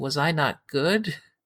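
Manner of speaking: defenseless, close to tears, high and slow. Retelling a scene where Buffy asks a question: imitating Buffy in tears. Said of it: "in tears, and she's like".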